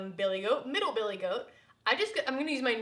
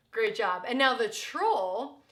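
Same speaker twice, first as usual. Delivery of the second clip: usual speaking voice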